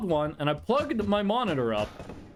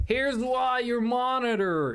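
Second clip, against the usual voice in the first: put-on American accent, higher pitch; 4 semitones higher than usual. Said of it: "he had an American accent".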